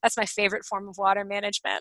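mock deadpan delivery. Retelling what your dad said, pointing at a windowless elevation; imitating a dry remark. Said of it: "totally dryly said".

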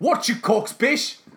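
put-on working-class South London accent. Acting out a made-up confrontation: South London working-man's accent. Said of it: "a South London working man's accent".

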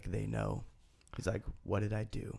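put-on raspy voice. Retelling how a man talking to himself in the bathroom incriminated himself, imitating his raspy voice. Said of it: "I'm trying to do his raspy voice".

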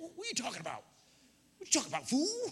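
very high, wildly swinging, swooping comic voice. Retelling Job's reply to his wife, done in a Fred Sanford voice. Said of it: "Picture that Fred Sanford voice".

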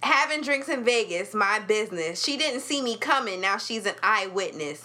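usual speaking voice

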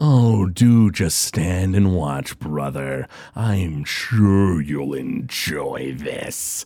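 very low, slow, smug, mocking drawl. Voicing a villain taunting his frozen brother: smirking taunt. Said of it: "Groon just sort of smirks. He goes".

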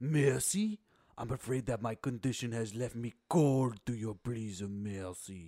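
dramatic, grand comic-book movie-villain delivery. Quoting a favourite line from the movie: Mr. Freeze voice. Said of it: "Mister Freeze in his perfect, uh, perfect delivery goes".

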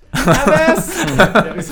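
high, loud voice, laughing while speaking.

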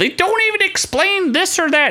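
put-on grating, annoying New York accent, pitched way up. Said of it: "she has a super annoying New York accent".

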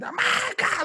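very high-toned, jumping way up in pitch. Describing an announcer getting into a higher tone: Joey Styles higher-tone call. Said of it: "but then when he got".

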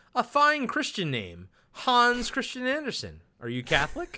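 derisive, taunting, mocking tone. Retelling a scene, the speaker quotes one man questioning another: retelling a mocking reply. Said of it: "Rumsfield replies mockingly".

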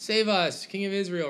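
high, loud, excited crowd cry.

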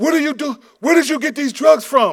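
very high-pitched, shrill yelling. Retelling an old commercial where a father finds drugs: imitating a father yelling. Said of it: "he's yelling at his son".

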